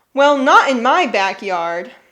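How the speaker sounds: loud, irritated, fed-up, annoyed voice. Reading Gina's reply in a story about the deer, annoyed. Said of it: "in an annoyed voice".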